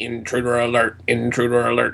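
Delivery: flat, machine-like robotic announcer monotone. Recalling a sound bite from an old video game, robotic voice. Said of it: "this robotic voice going".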